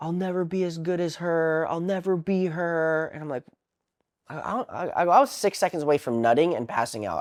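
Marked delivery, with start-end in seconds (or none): 0.0-3.1 mock high, wailing, sobbing outburst through tears. Retelling what his ex said during an argument, imitating crying and screaming. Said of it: "she's crying and screaming".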